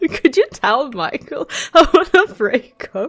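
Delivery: words spoken through laughter. Repeating a breakup message someone was asked to pass on, laughing while speaking. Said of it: "I'm sorry I'm laughing".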